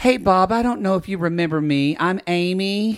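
sheepish, slow put-on celebrity voice. Retelling a celebrity walking up to Bob: sheepish Amy Poehler imitation. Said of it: "walk up kind of sheepishly and say".

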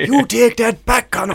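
accent from Kerry. Joking about accents in a conversation; County Kerry accent. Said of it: "now we're in Kerry".

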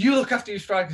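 put-on angry, heated back-and-forth shouting. Retelling a football shouting match with another player: retelling a shouted argument. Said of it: "I'm shouting".

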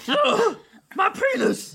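high, squeaky gnoll voice squeezed out through laughter.

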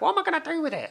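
high-pitched mum-type voice, very high. A speaker telling a family story about the nan's lodger, imitating nan Dorian. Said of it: "That's very similar to your Brian's mum voice".

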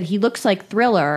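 ordinary talk

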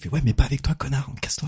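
put-on whisper. Recounting what one of the people whispering in the street said, imitating someone whispering. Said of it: "En chuchotant".

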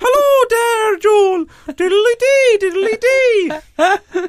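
put-on Irish accent, very high and very slow. Defending a joke to another speaker, imitating his Irish girlfriend's accent. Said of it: "That's exactly how she sounds".

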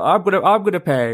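high, odd-sounding, insistent voice. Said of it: "I don't know why you sound like that".

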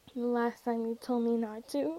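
ordinary delivery, nothing marked

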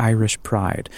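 ordinary delivery

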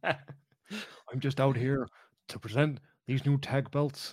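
put-on cranky, grumpy old prospector voice. Imitating a wrestler presenting new tag belts: grumpy Bret Hart impression. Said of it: "Bret Hart. It's Grumpy Bret".

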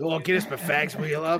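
put-on raspy smoker voice. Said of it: "smoker's voice".

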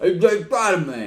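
put-on talking with mouth full. Imitating how a movie character talked: imitating someone talking with mouth full. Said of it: "He talked like he had a lot of food in his mouth".

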